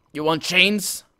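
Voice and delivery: gruff, rough orc voice. The chainmaker answers a customer who has come into his shop, gruff. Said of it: "He replies gruffly".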